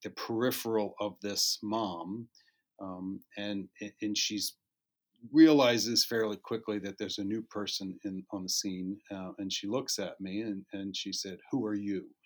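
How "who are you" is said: play-acted curt, blunt and abrupt. Retelling what a mother at the scene asked: imitating a blunt question. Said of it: "in kind of a blunt".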